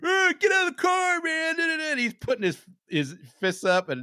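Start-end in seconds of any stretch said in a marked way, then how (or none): 0.0-1.6 mock shrill shout, very high-pitched. Retelling how a 75-year-old driver yelled at the speaker, retelling a yell. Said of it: "He's yelling at me".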